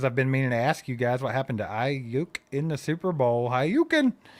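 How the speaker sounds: plain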